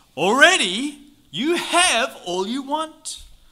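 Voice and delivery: heavy sarcasm. Reading verse 8 aloud to a group, in a tone laden with sarcasm. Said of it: "this is laden with sarcasm. So let's hear it with in such tones".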